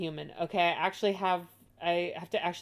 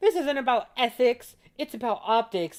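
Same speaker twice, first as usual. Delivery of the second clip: loud, high-pitched mocking parody voice; 6 semitones higher, 5 dB louder than usual. Reacting to a video, mimicking what she said: mocking imitation of her. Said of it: "I like how she's like".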